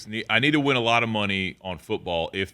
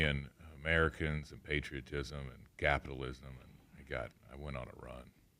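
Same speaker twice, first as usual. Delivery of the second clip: very soft, lifeless, drained voice. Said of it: "there's no energy in your voice".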